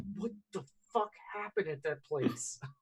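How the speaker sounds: very hushed, furious whisper with yelling intensity. A player's character leans across the tea table toward another, angry yelling whisper. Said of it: "in that very like angry yelling whisper".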